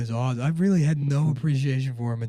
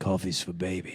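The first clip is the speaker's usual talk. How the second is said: put-on voice, much lower and quieter; 7 semitones lower, 7 dB quieter than usual. Reprising a voice bit from Monday, deeper put-on voice. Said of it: "So it's just deeper".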